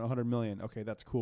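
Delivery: ordinary delivery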